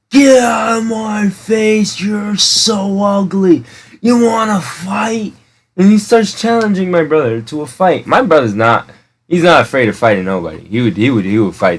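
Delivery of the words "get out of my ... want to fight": mock slow, drawn-out, high, top-of-the-lungs screaming. Retelling a homeless man confronting a friend, the speaker imitates him screaming. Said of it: "just from the top of his lungs".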